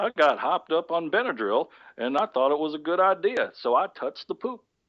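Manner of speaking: put-on genteel refined Southern accent. Co-hosts voicing a man in their comedy bit: genteel southern accent. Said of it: "giving him this genteel southern accent".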